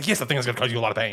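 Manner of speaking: very fast talking. Speaker quotes a character's reply, imitating his very quick talking. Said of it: "he just talks very quick".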